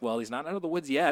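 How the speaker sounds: plain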